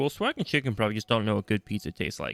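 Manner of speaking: plain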